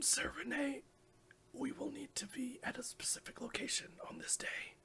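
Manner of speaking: raspy, wrecked voice in a whisper. Retelling a story, Eighty-Seven speaks to another character, Eighty-Seven's raspy destroyed voice. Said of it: "in her very like destroyed vocal cord raspy, raspy voice".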